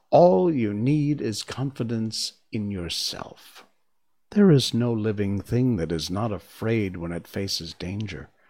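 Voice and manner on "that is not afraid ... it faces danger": plain reading voice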